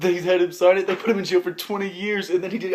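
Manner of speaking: laughing through the words. Speaker telling a story they call ridiculous, laughing while talking. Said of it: "I'm sorry, I'm laughing".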